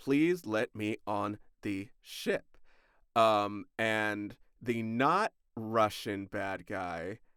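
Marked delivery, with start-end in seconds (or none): 0.0-2.4 mock pleading, earnest begging. Retelling a movie scene, voicing a woman trying to board a ship: mock begging and pleading. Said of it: "she's begging and pleading".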